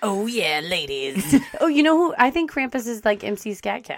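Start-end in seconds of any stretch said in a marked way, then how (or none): 0.0-1.4 put-on monster beast voice. Imagining how Krampus would talk, in a Krampus voice. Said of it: "in a Krampus voice".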